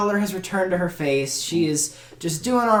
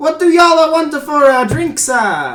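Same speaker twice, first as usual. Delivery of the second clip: put-on Italian accent, higher and louder; 9 semitones higher, 9 dB louder than usual. Voicing a very tired woman asking the table for drinks: Italian accent. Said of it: "in an Italian accent".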